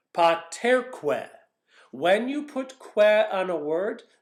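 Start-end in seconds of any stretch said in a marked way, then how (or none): 0.1-1.2 paterque, weight on the second syllable -ter. Latin lesson on adding que to a word: stress on TER in paterque. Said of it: "the accent goes on the syllable right before the que".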